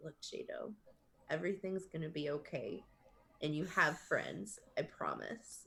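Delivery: soft, quiet, hushed whisper. Player voices her character comforting another character during a hug: whispering. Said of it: "she's gonna like kind of whisper to him".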